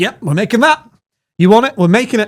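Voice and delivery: put-on slight Bristol accent. Describing replying to feedback in Reddit comments, with a slight Bristol accent. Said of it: "You had a bit of an accent there".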